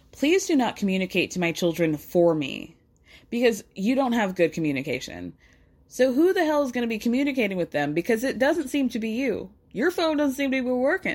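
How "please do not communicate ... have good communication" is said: put-on severe, stern, firm, no-nonsense tone. Speaker recounts Cody's reply to Janelle, imitating Cody sounding stern. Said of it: "Cody very sternly goes".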